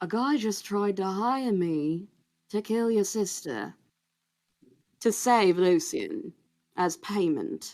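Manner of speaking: speaking low. Recounting a man who leads someone into his room, then speaks in a lowered voice. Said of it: "and then like lowers his voice".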